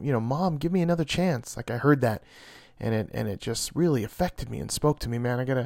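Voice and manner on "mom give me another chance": high, imploring, begging plea. Retelling a character's plea to her mother: imitating her begging. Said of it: "I heard her just begging".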